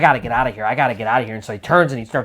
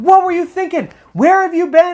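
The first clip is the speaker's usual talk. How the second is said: put-on very high, loud, furious scolding yell; 5 dB louder than usual. Retelling a grandfather about to scold his grandson: imitating an angry scolding yell. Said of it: "getting ready to chew him out, really yell at him".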